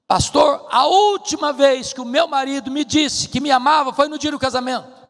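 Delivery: put-on bitter, aggrieved voice. Retelling a wife's complaint to the pastor about her husband: imitating an angry wife. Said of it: "a mulher estava muito brava com ele, muito brava".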